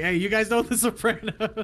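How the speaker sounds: pretend shout. Describing how the other person's reaction came across, retelling a yell. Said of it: "like you're yelling".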